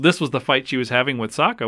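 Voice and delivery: ordinary talk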